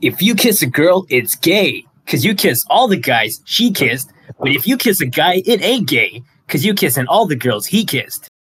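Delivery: put-on cartoon hedgehog voice. Doing a requested impression of a meme line: Sonic voice. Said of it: "Sonic kissing girls meme".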